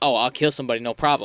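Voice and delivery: ordinary delivery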